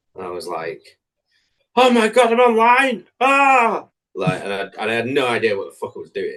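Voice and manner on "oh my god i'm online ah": play-acted very high, very loud, shrill, drawn-out panic. Recalling going on stream for the first time, the speaker acts it out, mock-panicking. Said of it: "I remember like panicking".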